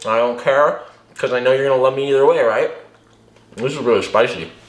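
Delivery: speaking with a full mouth. Signing off a video to viewers while eating, talking with mouth full. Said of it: "I talk with my mouth full".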